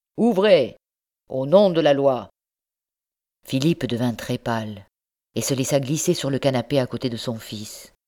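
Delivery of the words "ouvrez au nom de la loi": rough, harsh, loud shouting voice. Someone pounding on the house door demands entry, rough shout. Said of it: "Une voix rude cria".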